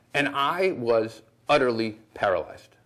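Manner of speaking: ordinary talk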